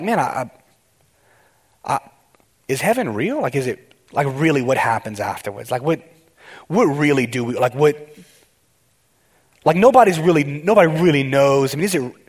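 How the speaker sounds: plain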